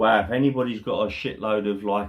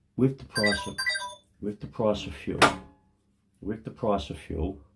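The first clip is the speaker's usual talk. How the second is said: hushed whisper, barely voiced; 4 dB quieter than usual. Starting to talk while Mally lies comatose nearby: whispering. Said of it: "I don't know why I'm whispering".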